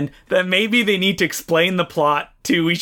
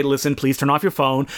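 ordinary delivery

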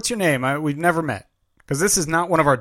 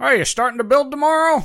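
put-on elderly voice impression, much higher, faster; 10 semitones higher than usual. Retelling being called to while outside, the speaker imitates an elderly voice. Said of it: "Now you're leaning old with that voice".

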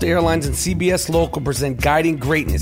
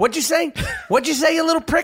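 put-on angry coach voice; 12 semitones higher than usual. Acting out a coach scolding a player who celebrated: Tom Izzo impression. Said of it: "my Tom Izzo impression that I'm perfecting".

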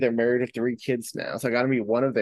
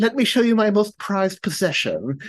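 put-on, high-pitched British child's accent; 8 semitones higher than usual. Retelling what a kid said when showing his prized possession: imitating a British kid's accent. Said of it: "and it's the accent, but, like, British kids".

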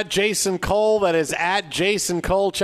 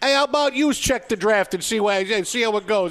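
put-on New York way of talking; 3 semitones higher than usual. Redoing a line just said, this time in a New York accent. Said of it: "I could have done it in a New York accent".

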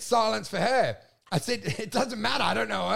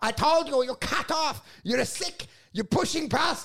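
fake Chinese accent, pitched high; 5 semitones higher than usual. Retelling how a man caught them ordering after being cut off, put-on Chinese accent. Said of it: "With a Chinese accent".

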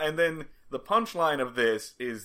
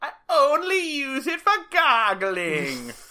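put-on weird, very high, old-timey witch voice; 13 semitones higher, 4 dB louder than usual. Repeating what a woman said to show her weird delivery, in an old-timey witch stirring a cauldron voice. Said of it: "like a old-timey witch like stirring a cauldron kind of voice".

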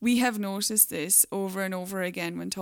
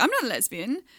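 uncomfortable, stiff, awkward raised voice; 4 semitones higher, 5 dB louder than usual. Quoting a woman quickly correcting the speaker, imitating someone's awkward voice. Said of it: "in an awkward voice, like".

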